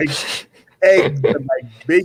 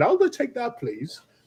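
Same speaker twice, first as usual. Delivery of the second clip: fake British accent, soft and high; 8 semitones higher, 6 dB quieter than usual. Retelling ordering a two-hundred-dollar steak, in a put-on British accent. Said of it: "I even put on like a British accent".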